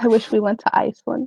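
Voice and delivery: muttering under the breath. Player's character nods at a merchant's offer, then says this muttered under breath. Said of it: "under her breath go".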